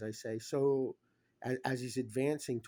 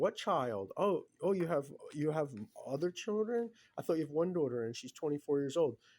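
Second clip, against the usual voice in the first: mocking, sarcastic, swooping sing-song tone; 4 semitones higher than usual. Retelling someone's sarcastic comments about the speaker's daughter, imitating a sarcastic tone.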